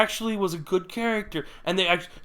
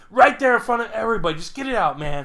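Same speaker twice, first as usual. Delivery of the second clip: plain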